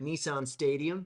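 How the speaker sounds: attempted American accent. Prompted by the interviewer to try their best American accent. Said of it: "your best American accent".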